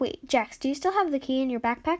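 plain reading voice

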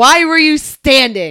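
loud, slow, blunt, pointed delivery.

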